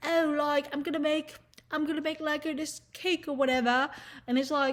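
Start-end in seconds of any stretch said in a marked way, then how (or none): 0.0-3.9 put-on prim, proper, posh British accent. Mocking prim and proper british people: mock prim british voice. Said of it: "prim and proper, like, fucking British people being like".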